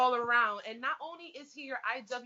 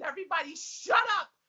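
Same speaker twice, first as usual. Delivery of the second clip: mock, high-pitched scream; 6 semitones higher, 4 dB louder than usual. Retelling a scream at the bar as the match came on: imitating own scream. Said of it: "I screamed".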